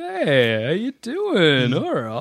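emu character voice. Talking about emus walking around a park, doing an emu voice. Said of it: "that's an emu voice".

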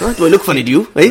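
mobster movie-style voice. Retelling a film scene to the others, Joe Pesci in Goodfellas impression. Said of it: "He's a bit like Joe Pesci in Goodfellas".

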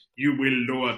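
bad, fumbled, failed Russian accent. Quoting Vladimir Putin threatening Truss, in a bad Russian accent. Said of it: "I don't know what that was".

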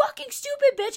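acted furious outburst, very high-pitched, enraged. Retelling how she hit and flipped it: imitating an enraged outburst. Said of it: "she's so enraged that she hits it".

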